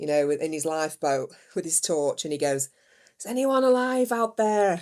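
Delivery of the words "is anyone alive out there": calling out, searching. Parent weeks into the school holidays, doing the Titanic lifeboat searcher's call. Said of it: "I'm going to sound like that guy off Titanic".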